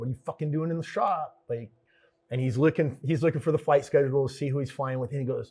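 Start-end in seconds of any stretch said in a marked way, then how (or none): 0.0-1.4 put-on fed-up, exasperated, irritated, high-pitched tone. Retelling how he felt when a man walked into the shop, mock-annoyed. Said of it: "I'm already annoyed".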